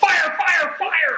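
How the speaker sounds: very high, silly, playful, alarmed shouting. Joking about running around the house: mock yelling fire. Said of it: "I'm just gonna run around the house".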